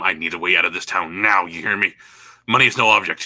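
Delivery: frantic, panicked, urgent voice. Player in character grabbing a bartender, a panicked demand. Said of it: "in my panic state just grab him".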